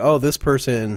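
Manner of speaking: plain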